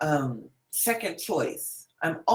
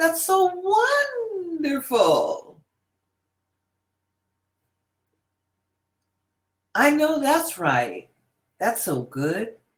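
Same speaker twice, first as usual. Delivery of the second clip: high, swooping happy lilt, "wonderful" drawn out; 8 semitones higher than usual. Demonstrating how the voice sounds when someone is really happy: happy dancing tone. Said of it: "You see the the tone changes".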